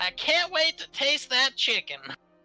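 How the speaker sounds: very high, private self-talk aside. Speaking in character during a game, whispering to himself. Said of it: "gonna whisper to himself".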